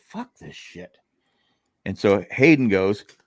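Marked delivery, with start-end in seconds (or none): 0.1-1.0 hushed, whispered grumbling mutter under the breath. Retelling waking up to people fighting and swearing, retelling muttering under breath. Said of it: "I thought I under my breath".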